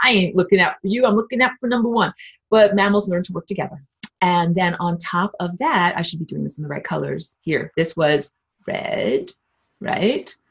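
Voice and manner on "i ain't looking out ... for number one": fast, put-on tough guy voice. Speaker explaining reptilians by voicing them in a tough guy voice. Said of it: "And I use my tough guy voice".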